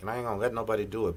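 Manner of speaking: fast, rattled-off talk. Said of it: "I'm talking fast just for him".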